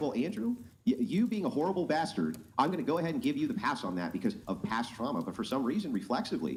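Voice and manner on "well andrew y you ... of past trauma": ordinary talk, nothing marked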